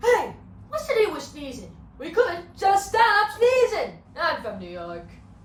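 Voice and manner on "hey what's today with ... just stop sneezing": very loud fake-flu voice, belted, swooping up high. Doing an impression of Jerry Seinfeld catching the flu. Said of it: "my impression of Jerry Seinfeld catching the flu".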